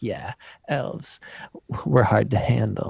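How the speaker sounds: mimicked seductive Californian voice. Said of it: "weird, like, California fuck me voice".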